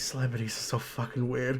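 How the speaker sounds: soft, mumbled mutter under the breath. Closing a cheese closet in character, muttering under breath. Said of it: "and under my breath".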